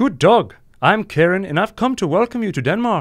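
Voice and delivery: fake Danish accent drifting into Irish. Asked what a person in Denmark sounds like, attempted Danish accent, sounding Irish. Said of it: "That sound that sounded kind of Irish".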